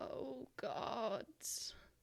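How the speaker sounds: hoarse breaking whisper. Voicing a hanging figure warning the party: husky, quiet, cracked voice. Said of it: "in a husky, quiet, cracked voice".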